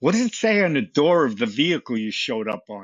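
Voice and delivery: mock, heavy, biting, very sarcastic tone. Retelling another firefighter's reply to online comments: imitating a very sarcastic reply. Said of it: "I'll say in a very sarcastic way".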